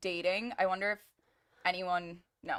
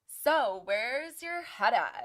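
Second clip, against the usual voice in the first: very slow, dragged-out, weary, fed-up delivery; 4 semitones higher than usual. Retelling how one person questioned another on a show: imitating someone fed up asking. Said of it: "the way she said it, you could just tell that she was so over asking".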